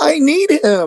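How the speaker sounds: weak, feeble, very high-pitched, light line delivery. Mocking how an actor delivered a movie line, in the most twink way possible. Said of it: "in the most twink way possible".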